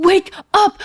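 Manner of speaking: put-on yell, words forced through gritted teeth, clenched jaw. Acting out how a man yelled at his brother; retelling a yell through gritted teeth. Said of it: "Through his gritted teeth, like Walker is yelling".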